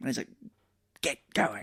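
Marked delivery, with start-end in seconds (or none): 1.0-1.6 hushed, barely-there, very quiet subdued voice. Retelling a movie scene where a villain gives an order: Evil Ash saying it real quiet. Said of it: "says it real quiet".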